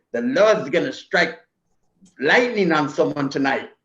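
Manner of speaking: put-on comic, funny paisa-style Mexican accent. Recalling a tough man who walked into parties: funny paisa accent. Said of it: "he had a funny accent. He was a paisa".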